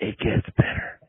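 breathy, hushed, close-in confidential whisper. Retelling what a drill instructor told a private: imitating a whisper. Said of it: "he just whispered it in your ear".

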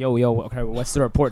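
ordinary talk

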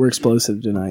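deliberately monotone. A podcast host welcomes listeners back to the episode, in a deliberately monotone delivery. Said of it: "with as monotone a delivery as possible".

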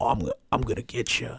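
sinister, menacing, taunting devilish voice. Retelling a funny interviewee suddenly staring into the camera: imitating a menacing satanic voice. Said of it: "the satanic laugh".

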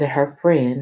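ordinary delivery

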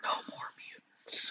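barely voiced, breathy, hushed whisper. Quoting the Scarlet Witch's famous line: whispering as Scarlet Witch. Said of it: "She whispered it".

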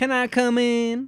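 put-on high, loud Southern accent. Podcast host reads Rosalie's line as she emerges, Southern accent as Rosalie. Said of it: "she's not Southern".

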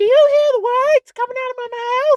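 very high, shrill, very loud belted yell. Quoting a well-known line: Chris Tucker impression. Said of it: "It's Chris Tucker".

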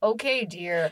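put-on sarcastic tone. Imitating a husband calling her dear: imitating a sarcastic "dear". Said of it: "it's 'cause it's sarcastic".

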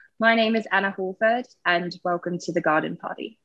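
attempted British accent. Doing a podcast intro after being asked for a typically british version: attempted british accent. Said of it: "veered into Australian South, uh, South African territory".

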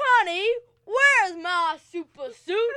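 very loud, high, put-on cartoon voice. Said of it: "You actually do that voice really well".

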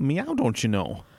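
plain Midwestern accent. Speakers compare regional accents; one demonstrates a Midwest accent. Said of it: "Or like in the Midwest".

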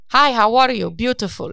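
loud mock Indian accent.

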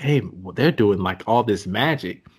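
plain

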